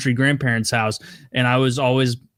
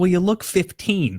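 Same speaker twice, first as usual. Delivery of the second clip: mother voice, raised pitch; 6 semitones higher than usual. Retelling a mom's reply to her eight-year-old: imitating mom. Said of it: "And she's like".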